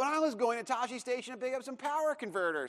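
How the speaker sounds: put-on whiny, high, soft teen voice. Quoting the whiny farm boy's famous line from the story, whiny Luke impression. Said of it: "just the whiniest kid".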